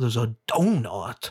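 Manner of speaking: put-on slow, molasses-like Southern accent. Praising an actor's performance, the speaker quotes him in a Benoit Blanc Southern drawl. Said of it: "it's like molasses coming out your mouth".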